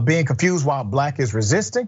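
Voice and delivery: ordinary talk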